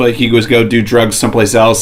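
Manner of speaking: normal talking voice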